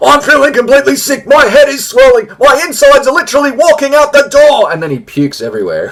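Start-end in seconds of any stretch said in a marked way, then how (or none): 0.0-4.7 very high, shrill, loud, yelled megaphone announcer voice. Retelling a man coming off a roller coaster: retelling a megaphone shout. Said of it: "he's shouting about it in the megaphone".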